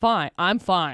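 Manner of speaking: flat, falling, downward inflection on "fine". Imitating how the other speaker answers people: imitating downward inflection. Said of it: "See that downward inflection at the end".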